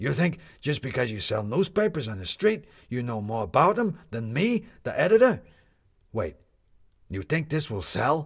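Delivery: sour, put-out, displeased, unhappy. The editor rounds on a street newspaper seller who says controversy sells, unhappy shouting. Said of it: "because [name] was always unhappy. / because [name] was always unhappy. It was just a matter of giving him new things to be unhappy about. / And then it made [name] himself unhappy, / If [name] was im".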